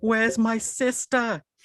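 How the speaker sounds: very high, loud screaming. Retelling a scene, asking where a sister is: imitating someone screaming. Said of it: "And then I just start screaming".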